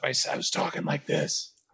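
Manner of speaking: soft, whispery, damaged raspy voice.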